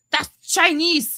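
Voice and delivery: put-on very high-pitched, indignant, angry old-lady voice. Retelling the speaker's Baba reacting to the speaker's name, imitating an angry old Ukrainian lady. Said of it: "Like she was so mad".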